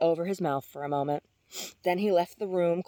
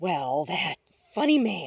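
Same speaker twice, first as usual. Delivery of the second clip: amused, drawn-out exclamation with a laughing chuckle. Narrator reading Robin reacting to Jean's news: exclaiming with a chuckle. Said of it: "Robin exclaimed with a chuckle".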